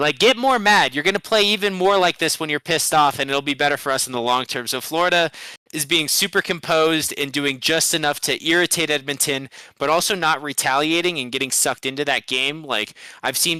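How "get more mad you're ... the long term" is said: normal talking voice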